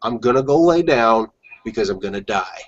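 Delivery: put-on very calm, even, matter-of-fact tone. Retelling own earlier words to a cousin: imitating own calm past words. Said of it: "I said to him so calmly".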